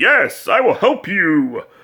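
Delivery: regal, noble, high, swooping voice with sing-song lilt. Describing how he imagined a book's goody-goody knight talking, regal Dudley Do-Right voice. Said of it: "talking like a real, regal, almost like Dudley Do-Right voice".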